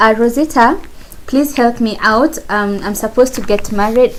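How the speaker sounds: plain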